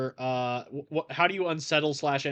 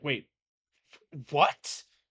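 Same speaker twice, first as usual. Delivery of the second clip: bewildered, baffled, caught off guard, broken off. Voicing an enemy hit by psychic whiplash: confused enemy. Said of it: "she's just like".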